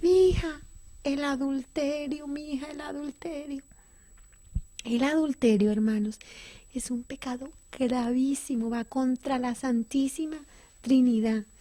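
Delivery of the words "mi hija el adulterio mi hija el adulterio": words sobbed out through tears, tearful. Recounting to listeners what her father said, imitating him crying. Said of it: "¿sabe qué decía llorando?".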